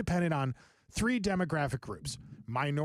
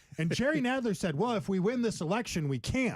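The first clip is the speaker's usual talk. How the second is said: ordinary talk, nothing marked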